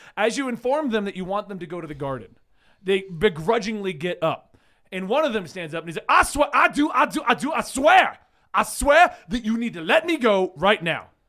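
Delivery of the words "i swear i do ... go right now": loud, slow, stretched-out cartoon rooster holler. Voicing a guest who demands to be let go: Foghorn Leghorn voice. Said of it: "Foghorn Leghorn".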